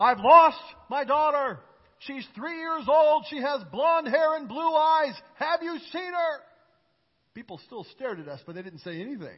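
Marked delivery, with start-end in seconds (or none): 0.0-6.4 loud, high urgent shout. Telling how her dad shouted to the whole store about losing her: retelling her dad's shout. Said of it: "my dad shouted".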